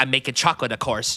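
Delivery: mannered, theatrical movie-line delivery. Quoting a favorite line delivery from the movie: imitating Timothée Chalamet as Wonka. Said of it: "I like Timothy's delivery of some lines".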